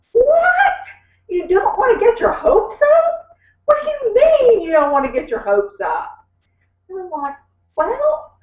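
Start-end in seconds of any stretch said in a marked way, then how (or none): 0.2-6.1 put-on shrill, swooping shriek. Recounting Bertha's reaction to something the speaker said, retelling Bertha's shriek. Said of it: "she just covered her ears and shrieked".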